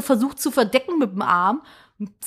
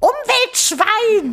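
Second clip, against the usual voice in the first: very high, roaring, bellowed outburst, acted out; 10 semitones higher than usual. Retelling how a woman behind the cyclist bellowed at the speaker: retelling a shouted insult. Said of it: "brüllt mich an".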